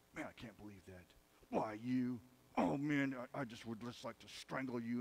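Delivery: muttering under breath. Imitating his dad reading the newspaper, mumbling under his breath. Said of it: "mumble under his breath".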